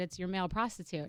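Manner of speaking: imitated Texan accent. Retelling a man's phone call to her hotel room: imitating a texan accent. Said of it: "he's got a Texan accent".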